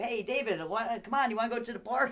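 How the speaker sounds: excited Italian-style voice, loud and high. Retelling how one used to call a child, imitating own excited Italian manner. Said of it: "I'm Italian. I talk like this".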